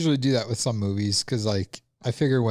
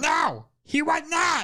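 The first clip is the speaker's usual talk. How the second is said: high, slow, shouted mock liar voice. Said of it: "That's my lying impression".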